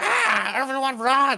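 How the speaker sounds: very high, piercing, shrill shriek. Retelling how a character in a scene reacts: imitating someone screaming. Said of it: "Then he starts screaming".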